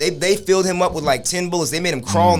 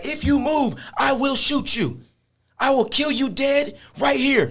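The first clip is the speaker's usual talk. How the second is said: mock cop voice, high, yelled; 8 semitones higher than usual. Speaker retelling a man ordering someone onto hands and knees, retelling a yell. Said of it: "You're yelling at me".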